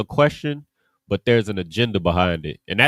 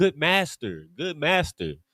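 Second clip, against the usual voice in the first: mocking, put-on sarcastic sing-song, drawn out; 5 semitones higher, 5 dB quieter than usual. Retelling how the questioners addressed Christ: imitating sarcastic flattery. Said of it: "sarcastically, like, placate to Christ".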